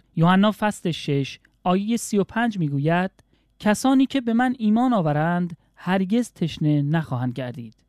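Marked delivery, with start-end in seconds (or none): none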